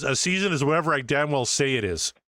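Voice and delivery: ordinary talk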